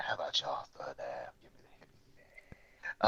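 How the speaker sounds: silky smooth, hushed near-whisper. Saying what to ask for at Christmas: silky smooth like Pootie Tang. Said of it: "Do you say it all silky smooth like Pootie Tang".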